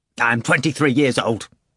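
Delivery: impatient, out of patience. Reading Ivan answering a question about his age, impatient. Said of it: "Ivan said impatiently".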